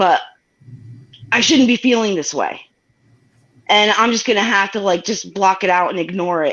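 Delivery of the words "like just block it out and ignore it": normal talking voice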